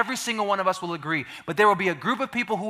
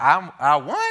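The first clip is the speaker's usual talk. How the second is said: bewildered, confused, unsure-sounding voice; 2 semitones lower, 4 dB louder than usual. Retelling the winner's reaction to the corrected result, imitating a confused contestant. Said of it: "she's confused".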